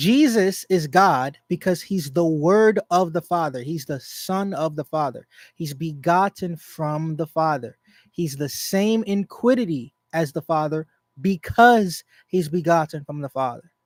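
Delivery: slow, deliberate delivery, each part spelled out.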